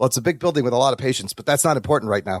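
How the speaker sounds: very low, level deadpan delivery. Quoting a favourite film line: Leslie Nielsen deadpan delivery. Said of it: "Leslie Nielsen with his deadpan delivery".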